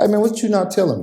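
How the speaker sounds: straight-out, no-nonsense tone. Retelling how he calls a friend: imitating his own blunt asking. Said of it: "I'm blunt as fuck".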